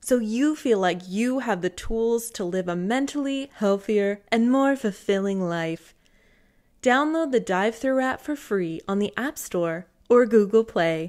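put-on commercial voiceover announcer voice. Reading an ad to listeners, in a special ad voice. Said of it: "my special ad voice".

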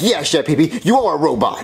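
ordinary talk, nothing marked

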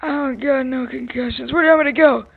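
put-on high, loud, grumpy, cranky very old man voice. Roleplaying a car accident victim whom a responder asks to sit: voice of a 95-year-old. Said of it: "I'm 95".

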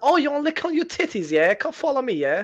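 put-on British accent. Answering someone who asks if he is friendly, in a put-on british accent. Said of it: "you don't have to put a British accent on".

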